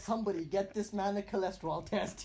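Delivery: ordinary talk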